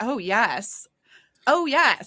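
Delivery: enjoying it, very slow and stretched out. Acting out a romance character saying yes: imitating someone enjoying themselves. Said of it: "that is the sound of somebody enjoying themselves".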